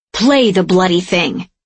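spluttering, spitting, furious delivery. The Virtue cuts off the woman holding his daughter's message, spitting rage. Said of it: "Spittle flies from the Virtue's mouth".

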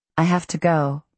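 ordinary delivery

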